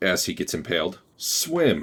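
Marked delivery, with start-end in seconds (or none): 1.2-1.8 very high, authoritative, commanding one-word delivery. Voicing a foe who gives an order while being impaled: very commanding voice. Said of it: "says in a very commanding voice".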